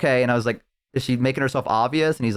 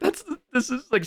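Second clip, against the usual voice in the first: mock, high, tearful voice on the verge of tears; 13 semitones higher, 4 dB quieter than usual. Retelling a role-play partner's reaction on a call, imitating her getting into tears. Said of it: "she was like starting like getting into tears".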